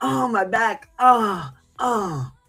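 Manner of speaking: drawn-out put-on groans. Showing how to moan on the phone: fake moaning like sex sounds. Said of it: "make sex sounds and make it sound like".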